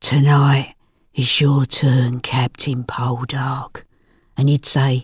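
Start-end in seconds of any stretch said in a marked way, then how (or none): 0.0-3.8 pretend purr, quieter. Acting out a fantasy line to Captain Poldark: purring voice. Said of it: "I'd purr. I'd say".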